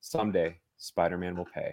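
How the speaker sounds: very low, dead flat monotone. Mocking an actor's line reading: flat, low-energy James Franco imitation. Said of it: "He has no affect in his voice".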